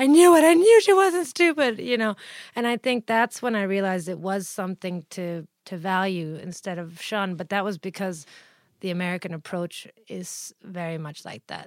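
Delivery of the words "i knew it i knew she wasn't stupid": very high, very loud shrieking scream. Recalling her mother's reaction to hearing of her dyslexia, imitating her mother screaming. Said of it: "my mother screamed at the top of her lungs".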